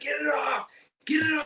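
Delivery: very high, scared, panicked shrieking scream. Telling how a fuzzy latched on while Cody stared, retelling a panicked scream. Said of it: "just screaming".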